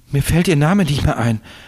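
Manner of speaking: stammering. A man breaking off mid-sentence about a woman he loved, stammering. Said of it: "stotterte er".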